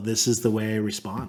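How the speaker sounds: ordinary talk, nothing marked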